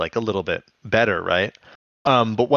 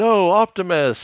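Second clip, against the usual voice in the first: put-on very high, shrill yelled cry; 10 semitones higher than usual. Recapping a scene where Super Ape is shot out of the air: retelling Rhinox's yell. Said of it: "And Rhinox yells".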